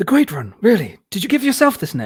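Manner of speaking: bad British accent, high and swooping. Quoting a cringe line from Prince of Thieves: bad Costner British accent. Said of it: "the last attempt at a British British accent that he does".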